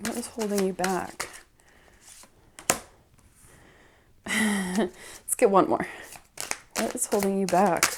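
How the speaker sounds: giggling through words while talking. Drawing cards and asking what is holding you back, laughing while talking. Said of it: "Sorry for laughing".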